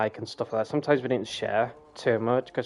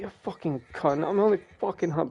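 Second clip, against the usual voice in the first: wild, furious, high-pitched angry swearing outburst; 6 semitones higher than usual. Retelling Shannon's reaction to getting shot in a game: imitating Shannon's angry swearing. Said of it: "the wild side of Shannon".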